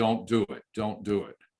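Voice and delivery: ordinary talk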